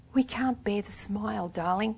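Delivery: soft, gentle, gently spoken soothing tone. Iris speaks to the weeping Nicola, gently. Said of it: "said Iris gently".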